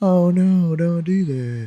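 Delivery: level, dragging drone. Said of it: "the way she talks is so monotone".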